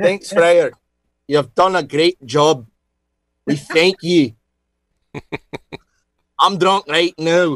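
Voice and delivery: fairly convincing put-on Scottish brogue. Thanking Friar John for the first record of Scotch whiskey, in a Scottish accent. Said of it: "Pretty good Scottish accent".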